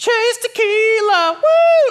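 put-on very high, loud, rowdy party-girl whoop. Describing pedal taverns downtown: imitating rowdy woo girls. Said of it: "twelve Woo Girls".

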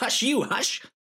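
put-on very high, old-time hero talk, 1938 style. Playing a Batman villain persona telling off Hush: talking like it's 1938. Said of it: "you talk like you're from nineteen thirty-eight".

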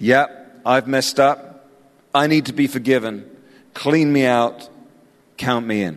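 ordinary talk

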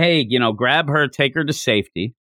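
ordinary talk

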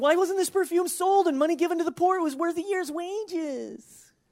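put-on complaining tone. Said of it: "you can hear the complaining tone in his voice".

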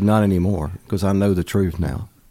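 ordinary talk, nothing marked

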